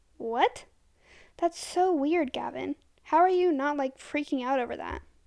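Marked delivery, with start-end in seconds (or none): none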